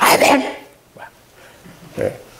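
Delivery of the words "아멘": glib, light, frivolous, flippant tone. Describing answering a pastor with amen, a flippant, frivolous amen. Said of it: "조금 방정맞게".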